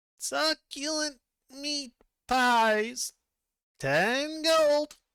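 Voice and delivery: tiny, very high squeaky voice, very slow. Voicing a cloaked figure selling pies at a cart: high squeaky voice. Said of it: "high, squeaky voice comes out of it".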